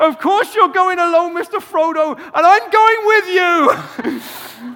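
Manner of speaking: very high-pitched, booming, big character voice. Retelling the scene where Sam answers Frodo: my best Sam impression. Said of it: "This is my best Sam impression".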